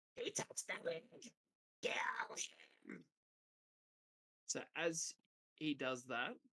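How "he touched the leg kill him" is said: distant, fast, whispered goblin screech. Voicing a creature whose leg was just touched, goblin-like screech. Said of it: "It sounds like a goblin screeching from afar".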